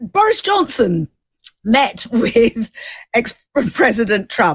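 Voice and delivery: laughter breaking in, swooping, laughing through words. Host back from a break, giving a headline to a guest, laughing while talking. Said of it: "I'm laughing".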